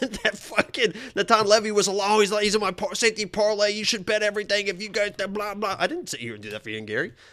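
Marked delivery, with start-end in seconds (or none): 2.1-5.8 acted-out, hyped-up, overexcited screaming. Mocking the other speaker's earlier betting claims: imitating someone screaming. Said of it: "you were the one that was screaming".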